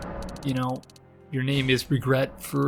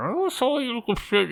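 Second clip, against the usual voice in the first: talking with the nose pushed up; 10 semitones higher than usual. Pushing up own nose while playing, talking with nose pushed up. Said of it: "It just makes you talk like that".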